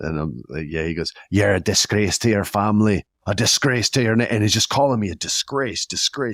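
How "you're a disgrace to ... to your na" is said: speaking in an Irish brogue. Retelling what the guy he tipped said to him, Irish brogue accent. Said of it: "still had the Irish brogue accent".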